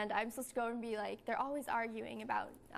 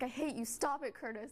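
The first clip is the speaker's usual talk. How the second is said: mock-mad tone, laughing and giggling through it. Speaker recalls trying to stay mad at a scene partner; retelling laughing while scolding. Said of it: "had to like laugh a little bit".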